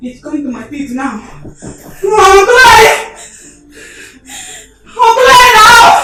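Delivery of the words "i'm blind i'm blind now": high, very slow, drawn-out shout. In a drama, a character in a cold room with a leaking ceiling, shouting. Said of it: "Why are you shouting?".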